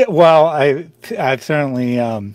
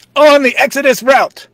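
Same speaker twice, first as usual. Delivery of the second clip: very high, loud shouting; 11 semitones higher, 6 dB louder than usual. Shouting the response line from behind the reader, as asked: shouting. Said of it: "And you're gonna shout".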